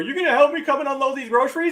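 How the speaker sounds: mock, high, calling yell from afar. Retelling his mom calling from the back door, retelling a yell from afar. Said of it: "she yells from the back door".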